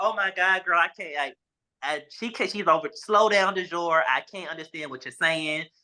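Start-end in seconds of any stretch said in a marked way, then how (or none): 0.0-1.1 acted-out crying voice. Telling how they called a friend in shock, retelling own crying. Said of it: "I'm crying".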